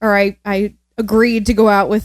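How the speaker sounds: normal talking voice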